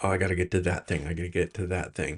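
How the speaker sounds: fast, hurried, rushed inner-voice delivery.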